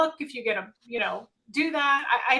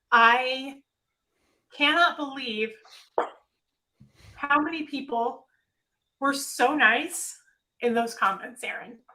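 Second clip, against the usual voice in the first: voice holding back tears; 3 semitones higher than usual. Thanking an audience for supportive comments, holding back tears. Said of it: "trying not to cry".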